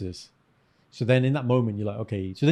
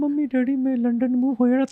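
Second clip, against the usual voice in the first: put-on very high, pleading, begging child voice; 14 semitones higher, 3 dB louder than usual. Acting out a friend as a child asking his parents. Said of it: "He's like".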